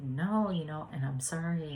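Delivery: ordinary talk, nothing marked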